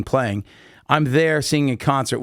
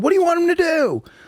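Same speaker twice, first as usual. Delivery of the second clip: very high-pitched yelling. Retelling a concert story, imitating his brother yelling at the security guard. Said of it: "my brother starts yelling at the security guard".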